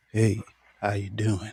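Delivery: low, sultry, come-hither tone. Welcoming a guest to the stage by imitating him: sultry voice imitating Charlie. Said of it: "I know I don't do it like Charlie".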